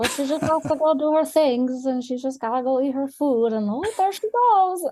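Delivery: high-pitched voice for a dog. Asked if they give their dog a voice, the speaker demonstrates by voicing the pet dog. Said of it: "she's always talking like this".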